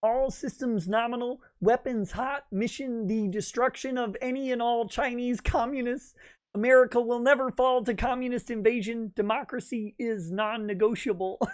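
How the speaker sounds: high, felt frog puppet cartoon voice. Mid-discussion, the speaker voices a quote attributed to Kermit: Kermit the Frog voice. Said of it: "Kermit the Frog says".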